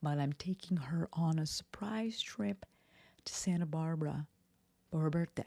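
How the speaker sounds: hushed, quiet whisper. Podcaster shares an update while someone is in the next room, whispering. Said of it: "I have to whisper because Lex is in the next room".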